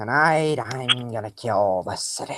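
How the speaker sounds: deliberate, low, slow, hushed comic-book supervillain voice. Showing another speaker a sample impression: Carnage voice. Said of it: "I can do a pretty good Carnage voice".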